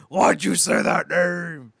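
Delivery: screaming little creature voice, high and loud. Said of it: "Godzilla's just screaming like this little".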